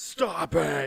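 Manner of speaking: loud, booming, hard yell. Retelling how a wrestler yelled at him: Vince McMahon yell. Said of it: "yells at me, goes".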